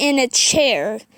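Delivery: ordinary delivery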